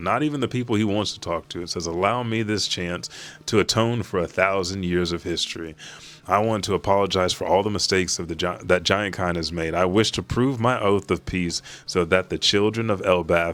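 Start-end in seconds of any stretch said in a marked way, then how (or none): none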